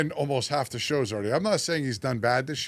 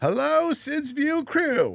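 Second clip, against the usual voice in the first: very high, strange, odd put-on voice; 12 semitones higher, 3 dB louder than usual. Reading out a listener's question to the group in a strange put-on voice. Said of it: "What is that voice?".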